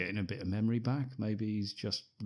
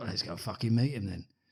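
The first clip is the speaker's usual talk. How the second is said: put-on character voice with an English accent. Retelling a film scene line by line: Sean Pertwee impression. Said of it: "That was my impression of him".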